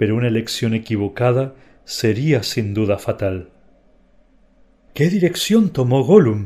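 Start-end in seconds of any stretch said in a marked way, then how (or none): 4.9-6.5 panting, out of breath, higher, louder. Sam asks a question, panting. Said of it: "jadió Sam".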